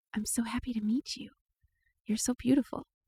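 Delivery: soft, quiet, hushed half-whisper. A player in a tabletop game leans down to speak to the plants, half-whispering. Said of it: "I lean down and I whisper".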